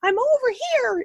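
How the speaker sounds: very high, tiny, cutesy cartoon voice. Recalling a pink phone answering its locator button, in a little Disney voice. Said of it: "in this little Disney voice".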